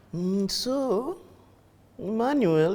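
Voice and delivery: serene, high, very calm, slow teacher voice. Recalling a teacher asking a student for notes, imitating a very calm teacher. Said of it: "Very calm".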